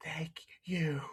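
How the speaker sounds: barely audible, high, hushed whisper. Narrating a game scene, voice a character whispering back. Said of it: "You hear him whisper back".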